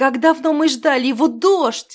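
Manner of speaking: joyful, high, loud glad cry. Narrator reading a story, continuing the dragoness's line: joyful exclamation. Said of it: "радостно воскликнула драконица".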